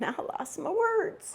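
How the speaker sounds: soft, teary voice on verge of tears, wavering pitch. Reflecting on how a spiritual journey changed their perspective, getting teary-eyed. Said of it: "I'm getting teary eyed just thinking about it".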